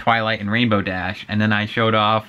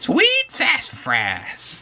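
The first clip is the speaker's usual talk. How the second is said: creepy character voice, much higher. Trying out a show's catchphrase, Creepy Twilight voice. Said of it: "a creepy Twilight".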